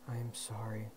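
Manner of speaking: hushed, soft half-whisper under the breath. Touching the eyes of the wrecked paper wing, she speaks; half-whispered. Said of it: "she whispered".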